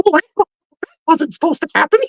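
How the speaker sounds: very high-pitched cartoon mouse voice. Explaining that costumed characters can't use a voice: Mickey Mouse voice. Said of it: "That's not a bad impression".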